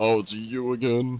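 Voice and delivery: mock snooty, talking-down, slow condescending drawl. Retelling how the other speaker sounded: imitating a condescending tone. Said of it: "so condescending".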